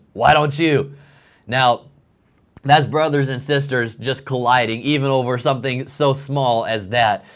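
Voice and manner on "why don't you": unfriendly, not-so-nice tone of voice. Retelling a sister's answer from the car: imitating Sarah's not-nice retort. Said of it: "she responds in a not so nice way".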